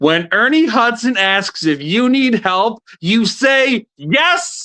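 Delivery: very high-pitched, shouted heckling yell. Retelling what someone called out from the line: imitating someone yelling. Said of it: "I hear somebody yell from the line".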